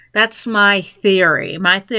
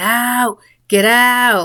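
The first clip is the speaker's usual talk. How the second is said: sleepy, mild shouting; 3 semitones higher than usual. Retelling a dream of ordering burglars to leave: imitating own shouting. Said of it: "and I'm shouting".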